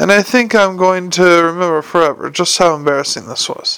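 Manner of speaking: plain reading voice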